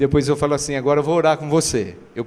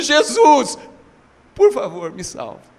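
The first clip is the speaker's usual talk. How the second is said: mock weeping, begging, tearful, swooping pitch; 8 semitones higher than usual. Retelling a tattooed man kneeling at an altar call: retelling a crying plea. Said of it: "se ajoelha e começa a chorar falando".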